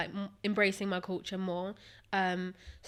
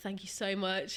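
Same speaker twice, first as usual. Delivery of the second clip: put-on insincere, sarcastic voice. Retelling a reply to online comments: imitating a sarcastic reply.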